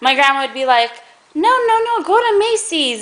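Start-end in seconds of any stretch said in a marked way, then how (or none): 1.4-3.0 put-on Spanish accent, high and slow. Quoting the speaker's grandma's reply, in her spanish accent. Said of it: "in her Spanish accent or whatever".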